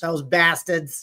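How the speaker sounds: put-on cartoonish father voice. Asked to say the line in Peter Griffin's voice. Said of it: "You gotta say that in Peter Griffin's voice".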